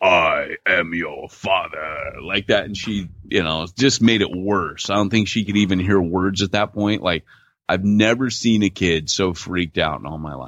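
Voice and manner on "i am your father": deepest, low, slow put-on voice. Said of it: "In my deepest voice".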